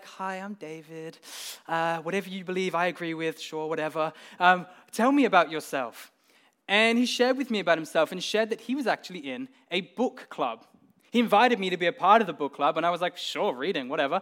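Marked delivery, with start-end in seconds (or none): 0.0-6.1 mild, meek, gentle voice. Recalling approaching a man he knew little about, retelling a gentle meek greeting. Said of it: "I went up to him so gentle".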